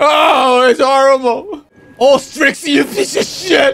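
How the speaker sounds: screaming in anguish. A player voicing a father whose son was just killed, anguished screaming. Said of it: "He's screaming for his son!".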